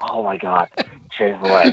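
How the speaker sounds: put-on words pushed out through heavy panting. Imitating another speaker eating chick-fil-a: imitating heavy breathing. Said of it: "That's why he was heavily breathing".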